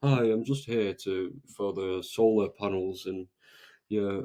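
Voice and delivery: unsure, halting, slow, stumbling flat monotone. Acting an unsure solar panel seller at your door: flat, stumbling monotone. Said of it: "unsure about the product, who's stumbling over his words and speaking really monotone, like".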